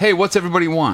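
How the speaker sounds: mock casual, loud calling out across room. Retelling a pizza order call where the caller yells: imitating a customer yelling. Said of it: "and then yells".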